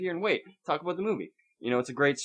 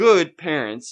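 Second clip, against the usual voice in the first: mocking, sarcastic tone, higher and louder; 3 semitones higher, 11 dB louder than usual. Mocking parents who bring a young kid to an adult movie: sarcastic. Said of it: "I'm being fucking sarcastic".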